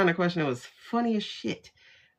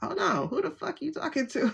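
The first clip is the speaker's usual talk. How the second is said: mock indignant tone, higher and quieter; 8 semitones higher, 6 dB quieter than usual. Retelling own reaction to a rude answer: indignant reaction. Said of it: "that was my response".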